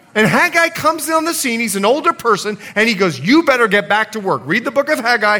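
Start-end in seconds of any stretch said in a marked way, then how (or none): none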